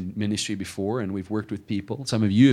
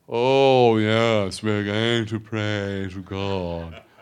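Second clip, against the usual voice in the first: very slow, snooty, airs-and-graces put-on voice; 4 dB louder than usual. Describing brothers who won't let you put on airs, the speaker mimics mock snooty talk. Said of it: "talk normal".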